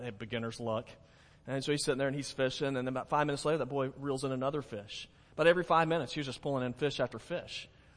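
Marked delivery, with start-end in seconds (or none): 0.0-0.9 mock muttering, much lower, quieter. Retelling an elderly man's reaction to a boy catching a fish: mumbled under the breath. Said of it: "under his breath, he just sort of mumbles".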